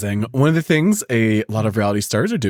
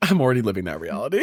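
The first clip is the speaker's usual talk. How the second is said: usual speaking voice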